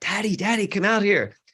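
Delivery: put-on high little girl screaming, yelling. Retelling a daughter calling from the backyard: imitating Nora screaming. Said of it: "screaming at me from the backyard saying".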